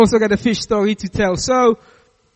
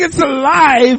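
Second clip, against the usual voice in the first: put-on screaming; 5 semitones higher, 4 dB louder than usual. Retelling a fishing trip, acting out the lady next to you; retelling a scream. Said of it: "while she's screaming".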